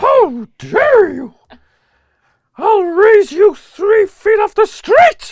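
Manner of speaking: shrill, very high, loud pig puppet voice. Right after a friend says he does a good one, Miss Piggy impression. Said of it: "Miss Piggy doing Yoda doing Gollum".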